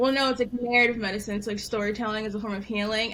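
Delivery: plain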